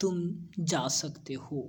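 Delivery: glum, downcast, sad, soft and slow. Speaker recalls how they were dismissed from class, mimicking a sad tone. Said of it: "इस प्रकार से काफी उदास भाव में".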